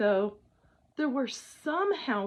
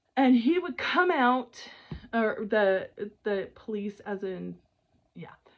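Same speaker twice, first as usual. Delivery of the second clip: ordinary talk, nothing marked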